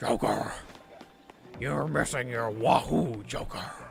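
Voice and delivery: very serious low voice. In a comic bit, Batman solemnly addresses the Joker in a very serious voice. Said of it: "with the most serious voice".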